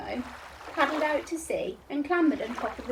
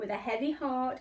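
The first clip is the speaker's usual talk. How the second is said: plain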